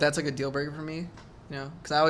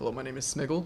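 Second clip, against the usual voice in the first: stern, businesslike executive tone. Imagining a top CEO introducing himself: stern CEO voice. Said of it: "a top C E O that's like, stern man".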